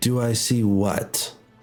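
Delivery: bone-dry, very droll deadpan delivery. Voicing a character who answers a question: very droll. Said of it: "you just hear this very droll".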